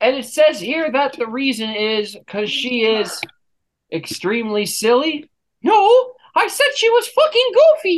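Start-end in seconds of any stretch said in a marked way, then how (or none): 5.6-8.0 very high, squeaky cartoon mouse voice. A husband corrects the person reading out his divorce reasons, in a cartoon mouse voice. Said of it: "I was doing the voice".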